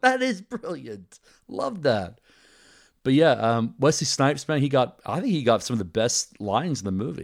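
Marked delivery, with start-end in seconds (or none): 0.0-2.2 much higher, slow, amazed gushing. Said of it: "I was like".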